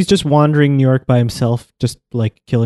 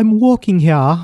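put-on, fake English accent, pitched up; 5 semitones higher than usual. Retelling what an Englishman said to a cab driver, in a put-on English accent. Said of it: "he doesn't because he's English".

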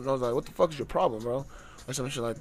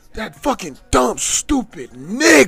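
very loud, shrill, top-of-lungs shout; 6 semitones higher, 12 dB louder than usual. Retelling what a man said to him, the speaker imitates someone shouting at full lungs. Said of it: "at the top of his fucking lungs".

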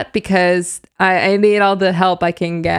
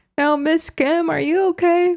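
put-on young child voice, higher; 10 semitones higher than usual. Retelling what a young cousin asked at the show: imitating Jedediah, a baby cousin.

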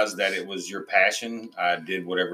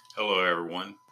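deep radio announcer voice; 3 dB quieter than usual. Greeting listeners after being asked to say hi: deep radio voice. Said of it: "that deep radio voice".

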